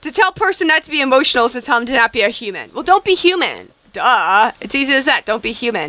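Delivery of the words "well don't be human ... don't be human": put-on sarcastic tone, swooping and sing-song. Mocking advice not to be emotional about stocks: put-on sarcastic tone. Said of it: "that was sarcasm".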